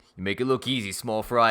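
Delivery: put-on New York accent, construction-worker guy voice. Acting out a scene as a construction worker guy, New York construction worker voice. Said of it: "like that New Yorker, like construction worker guy".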